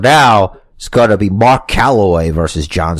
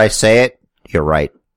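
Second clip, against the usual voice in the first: ordinary talk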